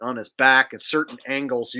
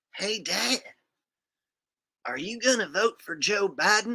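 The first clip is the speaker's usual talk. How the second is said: put-on cartoon boy voice, higher and quieter; 7 semitones higher, 4 dB quieter than usual. Doing a quick on-the-spot Bobby Hill bit: Bobby Hill voice. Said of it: "Little Hank and Bobby Hill for you".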